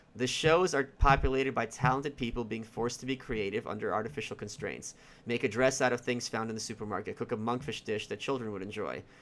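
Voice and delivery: ordinary talk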